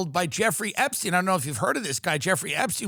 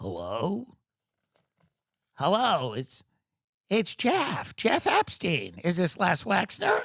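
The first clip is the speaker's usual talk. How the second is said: put-on slow, swooping, drawn-out, weird creepy childlike voice. Acting out a phone-call bit, speaker uses a creepy childlike Jeffrey Epstein voice. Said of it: "this weird, creepy, childlike voice".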